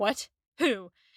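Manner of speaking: put-on alarmed, panicked, startled, caught-off-guard tone. Retelling a scene where Wickham panics at a name: imitating Wickham panicking. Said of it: "And Wickham panics".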